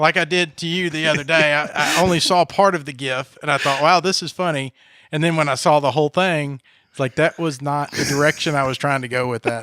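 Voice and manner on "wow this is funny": ordinary talk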